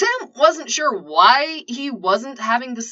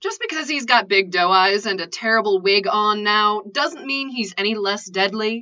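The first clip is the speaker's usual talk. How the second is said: ordinary delivery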